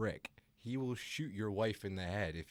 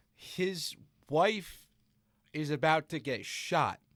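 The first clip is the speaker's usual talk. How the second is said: very loud, high-pitched, all-out yelling; 7 semitones higher, 8 dB louder than usual. Reacting to a Tom Cruise film, the speaker is yelling. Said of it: "I'm yelling".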